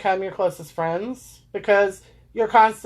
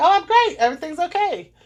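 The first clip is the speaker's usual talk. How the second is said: put-on cheerful, bright, cheery tone, pitched up; 9 semitones higher than usual. Retelling how they smiled and assured everybody: imitating fake cheerful reassurance. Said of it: "I plastered a s-, smile on my face".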